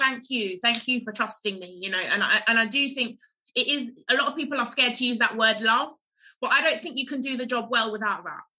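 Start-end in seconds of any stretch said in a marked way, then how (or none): none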